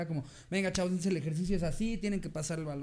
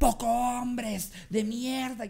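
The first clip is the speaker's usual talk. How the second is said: loud, drawn-out, mock shouted yell; 6 semitones higher, 5 dB louder than usual. Retelling how someone arrived and yelled at the group; retelling a yell. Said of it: "Llegó a gritarnos".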